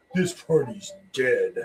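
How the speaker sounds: imitated smug, mocking, self-satisfied tone. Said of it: "Why do you sound like such a douchebag".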